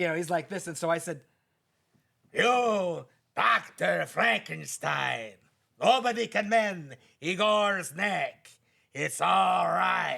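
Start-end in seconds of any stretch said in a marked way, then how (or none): 2.3-10.2 loud, rough, creaky voice, dragged out very slowly. Retelling performing for someone who asked him to do Igor: Igor voice. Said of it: "Do Igor from Son of Frankenstein".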